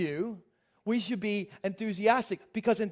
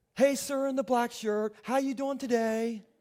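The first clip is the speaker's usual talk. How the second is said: put-on enthusiastic cashier voice, slower; 2 semitones higher than usual. Telling a story about a store cashier, imitating an enthusiastic cashier. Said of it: "the enthusiastic cashier".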